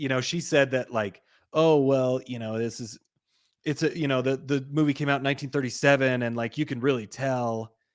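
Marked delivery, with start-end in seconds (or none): none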